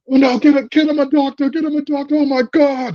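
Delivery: put-on very high scream in thick Cockney accent. Recounting a wrestler running off an attacker, do Will Ospreay screaming in thick Cockney accent. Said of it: "he's just screaming that in his, like, British thick-ass Cockney accent".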